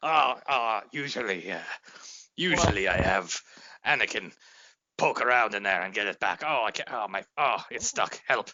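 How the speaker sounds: low, flustered, stumbling, fumbling, panicked voice. Acting out a Sith Lord whose eye goes lazy mid-duel: imitating a flustered Sith Lord. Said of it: "just smacking himself in the side of the head like".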